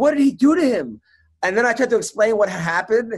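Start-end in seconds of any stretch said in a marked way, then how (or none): 0.0-1.0 put-on genuinely frightened tone, high-pitched. Retelling how his wife's mom reacted, imitating her legitimately scared. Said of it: "like she was like legitimately scared".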